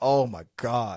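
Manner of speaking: put-upon, fed-up, exasperated exclamation. Retelling a movie scene where she hears who knocks: imitating an exasperated eye-roll. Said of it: "she rolls her eyes like".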